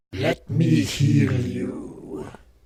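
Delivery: very low, deep, creepy, sinister evil villain voice. Imagining the scary character with voice acting, the speaker does his voice. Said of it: "I swear he'd sound just like this".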